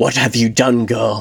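hissing. A narrator reading the queen's words to a girl, hissing. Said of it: "The queen hissed".

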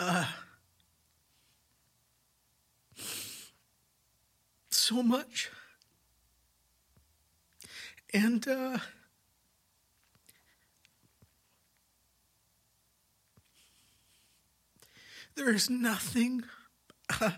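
crying while talking. Recalling when God showed up in the church, crying while talking. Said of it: "I can't talk about this without crying".

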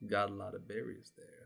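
mysterious dark character voice. Voicing a stranger behind the player, a long shadow: shadowy stranger voice. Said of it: "you just hear a voice that goes".

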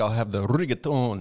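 slow put-on Italian accent. Mocking a guy who does the accent when he orders food: put-on accent ordering food. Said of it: "got to do the accent when he orders his food".

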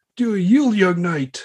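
high, commanding knight voice.

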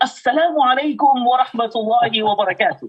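proud, announcing tone, given out loudly. A speaker recalls a proud student greeting everyone at school, imitating a very loud greeting. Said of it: "very loudly he would say".

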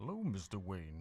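muffled masked villain voice with audible breathing. Imitating how Bane sounded, like Vader played by Sean Connery: Bane voice. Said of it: "Like that guy?".

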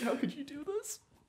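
very high, teary mock wail.

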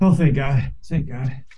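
worn out, weary and tired. Greeted on a Friday after a long week on the road, the speaker sounds exhausted. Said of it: "You sound exhausted".

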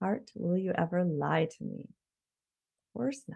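quiet, meditative murmur.

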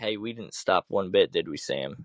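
ordinary talk

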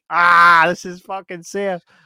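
screaming in real pain, very loud, drawn out. Telling how Linda Blair's harness came loose during filming, imitating her screaming. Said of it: "she was actually screaming like".

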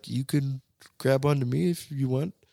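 small, meek, timid delivery. Retelling what a boy in the ticket line said: imitating a meek voice.

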